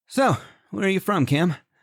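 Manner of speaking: very high, bright, chipper upbeat tone. One of two companions asks the other where he's from, in a chipper tone. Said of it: "Hank asked with a chipper tone".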